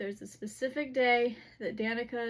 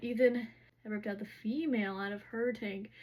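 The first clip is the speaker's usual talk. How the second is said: normal talking voice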